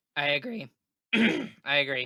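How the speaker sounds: very drawn out and slow, voice breaking and cracking. Agreeing with another speaker's prediction about the series, voice cracking. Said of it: "Voice crack".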